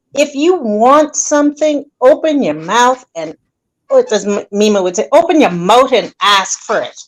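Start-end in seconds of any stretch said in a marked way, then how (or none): 5.1-6.9 put-on accent from the Bahamas. Quoting what Mima would say: imitating Mima's Bahamian accent. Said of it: "There go that Bahamian accent".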